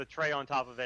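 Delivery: ordinary delivery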